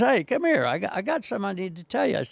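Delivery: put-on, high-pitched holler. Recounting a heckler calling him over, imitating someone yelling. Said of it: "he's yelling at me".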